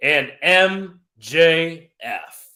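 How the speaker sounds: announcer voice, each word drawn out slowly. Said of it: "let's get into my announcer voice".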